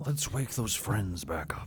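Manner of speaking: grand, majestic lion voice. Acting out what Aslan says after he meets Lucy, in a Liam Neeson voice. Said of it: "in the Liam Neeson voice".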